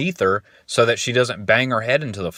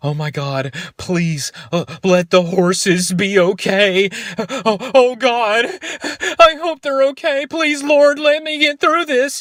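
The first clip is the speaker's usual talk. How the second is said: mock high-pitched sobbing, tearful bawling pleading tone; 11 semitones higher, 3 dB louder than usual. Retelling what a woman said while driving through flames, imitating someone bawling. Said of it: "she's like bawling her eyes out".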